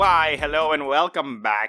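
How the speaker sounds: sinister, nefarious put-on villain voice. Welcoming everyone back at the start, in a put-on nefarious voice. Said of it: "I'm just using this nefarious voice".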